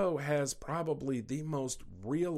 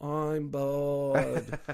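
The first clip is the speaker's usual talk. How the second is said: put-on thick Australian accent. Imitating the cartoon kids saying they're bored: Bluey kids' thick Australian accent. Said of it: "thick Australian accents".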